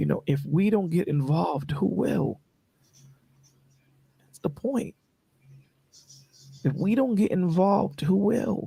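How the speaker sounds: choked-up voice catching with tears. Speaker telling listeners about a hard topic, choked up with tears. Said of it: "I'm tearing up talking to you guys about it".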